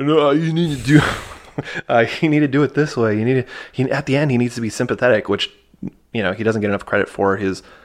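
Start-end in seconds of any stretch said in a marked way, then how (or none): 0.0-3.5 put-on mumbling movie-star voice, higher pitch. Retelling what an actor told the editors: Sylvester Stallone voice. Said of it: "I should do the voice".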